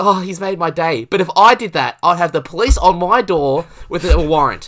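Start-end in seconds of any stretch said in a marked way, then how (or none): 0.0-1.0 mock flustered gushing woman's voice, higher. Retelling how someone reacted, all red: imitating a flustered woman. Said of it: "all red and flustered".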